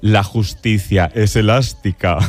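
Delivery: low, wicked, purely evil villain voice. Quoting a character's line from the series Herederos in Concha Velasco's mock-evil villain voice. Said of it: "decía así con voz de muy mala, malísima".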